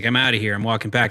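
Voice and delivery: irritated voice. Retelling a movie scene where a character storms off: imitating someone annoyed. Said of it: "Martin Short was really annoyed".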